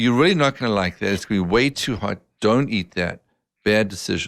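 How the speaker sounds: plain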